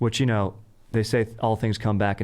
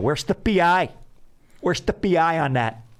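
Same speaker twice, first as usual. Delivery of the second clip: put-on Upper Midwest accent, Wisconsin style, pitched up; 8 semitones higher than usual. Speaker showing what they say every time they land, midwest accent. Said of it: "the accent you're doing is more Wisconsin, Minnesota".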